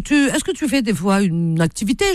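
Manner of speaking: plain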